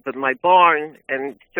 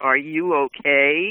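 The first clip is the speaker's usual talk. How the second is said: snide, heavily sarcastic, mock-concerned voice. Retelling how a police officer on a welfare check asked, mock-sarcastic officer quote. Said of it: "very sarcastically said".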